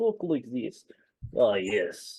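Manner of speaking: very weak, faint, sing-song put-on Russian accent. Voicing a bird's lines in Hades, with a very weak Russian accent. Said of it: "A very weak Russian accent".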